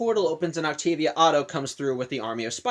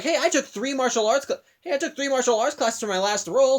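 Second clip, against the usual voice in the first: thrilled, eager, excited high-pitched voice; 8 semitones higher than usual. Retelling how the actress playing Spider-Woman answers: imitating someone excited. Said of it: "is just all excited".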